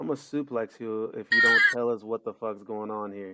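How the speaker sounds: intimidating, threatening, menacing voice with swooping pitch. Player in a game speaking in character to intimidate him, intimidating threat. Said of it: "I want to intimidate him".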